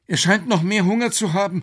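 quavering, trembling, very high-pitched voice. As Professor Quakenbrück cheers at finding Nessie, Alex speaks up; trembling voice. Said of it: "sagte Alex mit zitternder Stimme".

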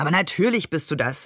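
ordinary talk

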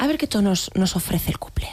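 put-on soft ASMR whisper.

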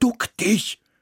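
high-pitched, urgent hissed voice. The narrator warns the mouse as the magpie turns toward them: hissed. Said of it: "zischte ich".

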